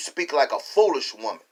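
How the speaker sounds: normal talking voice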